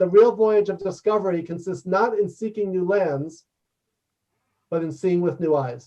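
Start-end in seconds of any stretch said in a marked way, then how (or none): none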